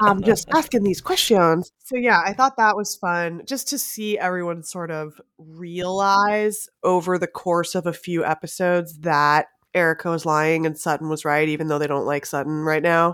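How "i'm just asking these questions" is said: put-on clipped, posh southern accent, higher pitch. Imitating a rich reality-TV villain questioning a story: clipped rich Southern accent. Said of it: "the Southern accent, but ... clipped".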